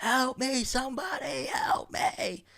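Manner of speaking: acted, very high, slow, stretched-out pleading call. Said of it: "you're screaming at the top of your lungs".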